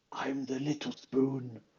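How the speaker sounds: hushed yet loud stage whisper meant to carry. Playing a character in a game, turning to another character, loud whisper. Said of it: "whisper very loudly to Virgil".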